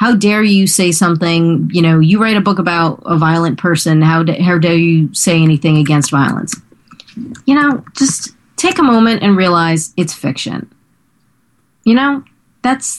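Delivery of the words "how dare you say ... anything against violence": usual speaking voice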